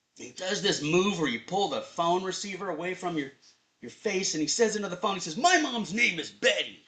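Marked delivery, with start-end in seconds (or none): 5.4-6.7 put-on drunken man voice, higher. Retelling what a confused man said into the phone: imitating a drunk man. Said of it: "he's confused and he's drunk".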